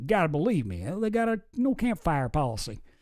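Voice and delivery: fake, put-on Texas accent. Retelling what a man who was away all weekend told her, put-on texan accent. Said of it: "However Texans talk".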